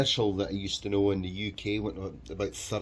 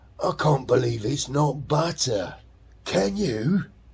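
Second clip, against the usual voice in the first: put-on broad Cockney accent laid on thick, loud and high; 5 semitones higher, 5 dB louder than usual. Quoting how he used to say the line, doing a Michael Elphick Cockney impression. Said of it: "really thick Cockney accent".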